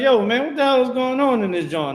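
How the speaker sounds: acted-out scolding call-out voice. Retelling how a man in the I G B K reacts to dancing: imitating a man scolding. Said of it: "He like".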